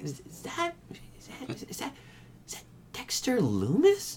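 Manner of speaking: hushed, barely voiced, halting whisper. Retelling how the announcers asked who was dragged from ringside: imitating a whisper. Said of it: "literally, like, whispering".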